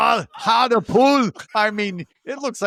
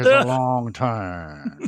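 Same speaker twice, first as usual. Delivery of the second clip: put-on speech through clenched teeth, lower pitch; 10 semitones lower than usual. Imitating a movie actor's line: imitating talking through clenched teeth. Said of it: "this actor talks with his teeth like that".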